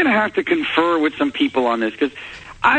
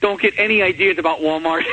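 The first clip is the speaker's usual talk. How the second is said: plain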